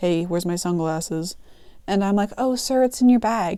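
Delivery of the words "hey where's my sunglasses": rough, low, quiet, gruff grumble. Retelling what a man said when he turned to the speaker, imitating a gruff voice. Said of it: "Kind of in this gruff".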